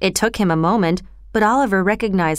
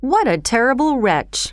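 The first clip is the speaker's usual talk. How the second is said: usual speaking voice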